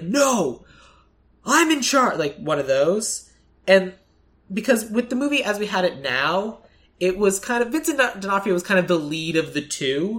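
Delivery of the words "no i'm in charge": angry, deliberate, pitched-up voice, losing temper. Picturing an actor as a cop who snaps: imitating Aaron Taylor Johnson getting angry. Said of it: "getting really angry. He's like".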